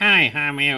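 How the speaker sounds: ventriloquist dummy voice, lips kept still. Explaining what a ventriloquist does, demonstrating a ventriloquist dummy voice. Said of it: "it makes it talk like this".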